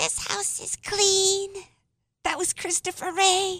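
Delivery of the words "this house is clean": slow, eerie, creepy little lady voice. Imitate what the little lady said about the house, in a creepy little lady voice. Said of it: "Do I sound like her?".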